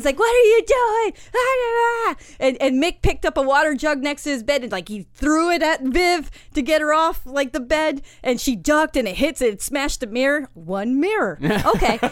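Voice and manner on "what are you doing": shrill, high, very slow, drawn-out angry scream. Retelling a fight, acting out what an angry woman screamed, retelling a scream. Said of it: "And she's screaming".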